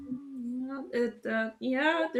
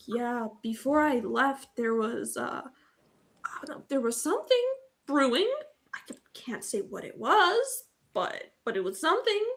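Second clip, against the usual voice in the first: voice lowered, pitched low. As the character Alani, answering the others, lowered voice. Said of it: "Alani lowers her voice like".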